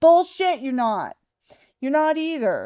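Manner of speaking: furious, angry yelling rant. Ranting about Social Security checks, the speaker is yelling angrily. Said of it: "I'm yelling about it".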